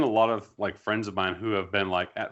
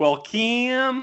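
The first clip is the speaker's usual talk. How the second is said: very high, loud, put-on Eastern Tennessee accent; 6 dB louder than usual. Speaker showing how she slips into her aunt's accent: eastern tennessee southern accent. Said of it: "Eastern Tennessee sort of accent".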